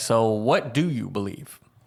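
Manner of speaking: suggestive, loaded tune across the whole line. Retelling a brother's question from a text: imitating brother's loaded intonation. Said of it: "You're putting in Mason intonation for brother's statement".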